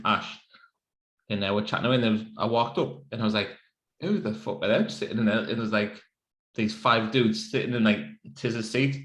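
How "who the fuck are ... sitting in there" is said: plain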